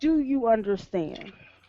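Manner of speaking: intimidating, menacing, threat-laden cowing tone. Intimidating a captive in character, casting a spell: booming voice three times louder. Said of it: "boom my voice three times as loud as normal and say".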